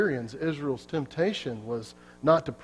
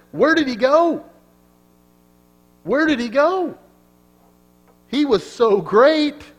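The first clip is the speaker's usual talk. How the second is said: mock very high, loud, dripping sarcasm; 11 semitones higher, 9 dB louder than usual. Retelling what god said of a fallen ruler: acting out a sarcastic line.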